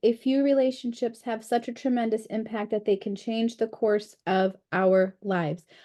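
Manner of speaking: ordinary talk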